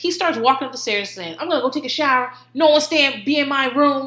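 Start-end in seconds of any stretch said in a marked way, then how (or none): 1.4-4.1 put-on angry man voice, mock-angry outburst. Speaker retells a man heading upstairs after a fight over his gel; imitating an angry man. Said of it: "He's so mad".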